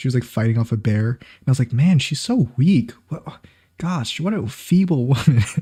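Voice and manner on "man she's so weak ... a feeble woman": complete sarcasm, dead straight, slow and mock-serious. Retelling her own remark about a woman fighting off a bear, mock sarcasm. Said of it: "As like a complete sarcasm".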